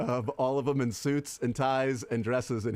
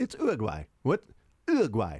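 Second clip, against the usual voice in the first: put-on British accent, fake British pronunciation. Showing friends how to say a word, more demonstrative each time, in a British accent. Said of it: "British accent while you're doing".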